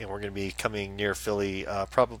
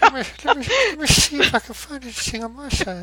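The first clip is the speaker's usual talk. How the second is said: put-on old man voice, higher and louder; 8 dB louder than usual. Doing the voice after the other speaker asks for it: Family Guy old man voice. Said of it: "you should do your voice like a".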